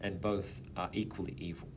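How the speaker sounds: plain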